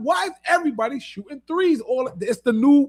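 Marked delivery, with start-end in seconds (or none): 0.0-1.8 yelling, called out high and fed up. Retelling a jail basketball game he watched: imitating own past yelling. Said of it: "And I'm yelling".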